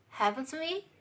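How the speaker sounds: pitch rises at end of "haven't we", on "we". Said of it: "raising intonation in questions that ask real questions".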